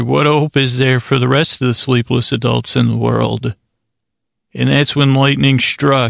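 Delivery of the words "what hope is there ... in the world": ordinary talk, nothing marked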